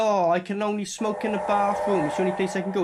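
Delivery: ordinary delivery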